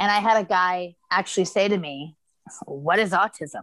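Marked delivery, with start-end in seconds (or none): 2.7-3.6 mock smug, cocky, condescending, talking-down tone. Retelling what a guy at customs asked: imitating a cocky condescending tone. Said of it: "in this really cocky, condescending".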